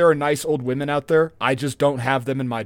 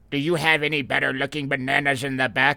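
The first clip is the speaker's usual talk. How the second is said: put-on old lady character voice. Acting out an old lady in a produce department, in an old lady voice. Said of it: "my go-to old lady voice".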